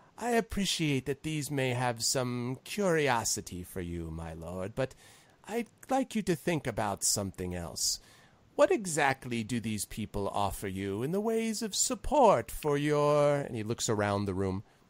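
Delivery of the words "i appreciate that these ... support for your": oily, fawning, seedy, simpering courtier voice. Voicing a cult leader addressing a great lord: seedy, simpering manner. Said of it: "seedy, almost simpering manner".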